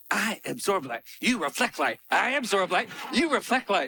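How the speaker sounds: mock ecstatic delivery. Recall how he went around the set repeating the line, imitating someone ecstatic. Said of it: "and then he was ecstatic".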